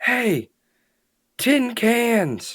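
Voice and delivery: very loud, very high, shrill full-volume hollering. Calling out to distant soldiers in character: shouting as loud as possible. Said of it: "raising my voice as, as loud as I can".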